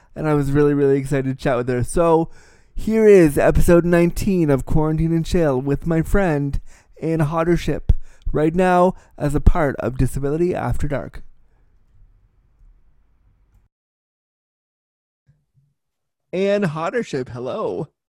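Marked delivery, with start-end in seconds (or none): 1.9-17.9 put-on polished, professional broadcaster delivery. Introducing a show episode and greeting a friend as guest: pretend professional voice. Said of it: "my pretend professional voice".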